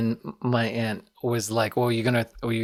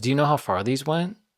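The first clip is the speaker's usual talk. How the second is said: put-on concerned but calm tone; 3 semitones higher than usual. Speaker retells a woman approaching their aunt, imitating calm concern. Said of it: "Like concerned, but like calm".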